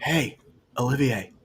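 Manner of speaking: whispering in character. Whispering in character to Olivier during the game: whispering in character. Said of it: "He's gonna whisper".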